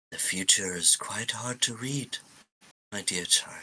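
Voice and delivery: tender, intimate, gentle voice close to the ear. A game master voices an unseen speaker close to a player's ear: soft voice. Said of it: "You hear a soft voice in your ear".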